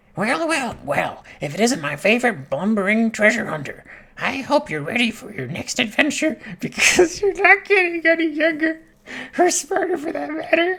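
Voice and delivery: loud, very high parrot character voice. Speaker reading a parrot character's game dialogue, attempting a parrot voice. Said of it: "I can't do the parrot's voice".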